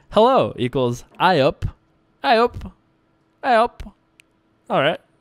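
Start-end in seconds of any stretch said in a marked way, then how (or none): 1.2-3.9 very slow, pitched-up, attempted Yorkshire accent. Speaker trying out Yorkshire slang words someone gave them, in a Yorkshire accent. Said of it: "slang words here to say from the Yorkshire accent".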